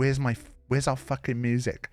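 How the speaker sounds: furious, angry, demanding outburst. Retelling how someone demanded the missing music; mock-angry. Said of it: "in an angry voice".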